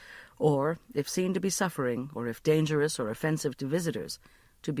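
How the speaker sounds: ordinary delivery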